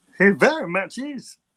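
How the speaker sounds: put-on voice of a little alien creature. Joking in a group conversation about an actor, doing a Yoda impression. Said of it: "Olive's freaked out by my Yoda impression".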